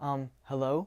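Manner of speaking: nervous, unsure, wavering shaky voice. Showing how a nervous person greets someone: nervous wavering voice. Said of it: "My voice is very wavering".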